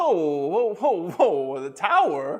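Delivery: bad, put-on Kentucky accent. Retelling what a phone agent said: attempted Kentucky accent. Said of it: "I can't do an accent, I'm sorry".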